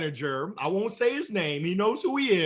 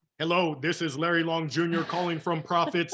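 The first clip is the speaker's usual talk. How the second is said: put-on robotic, mechanical-sounding delivery. A salesman recalls his early scripted cold calls, imitating his robotic phone voice. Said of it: "And I sounded like a robot".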